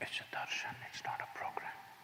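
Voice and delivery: quiet whispering. During a participant's talk to an audience, prompting them, whispering.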